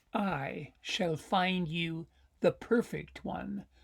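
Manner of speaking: soft, hushed library voice. Narrating Mouse's line to Bear in a story: quiet library voice. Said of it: "Mouse said quietly in his library book library voice".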